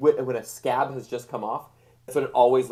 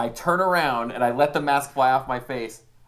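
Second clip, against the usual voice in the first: ordinary talk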